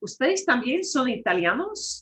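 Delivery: voice trails upward in pitch on italianos. Spanish lesson on asking questions, voice rising at end on italianos. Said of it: "just have your voice trail up".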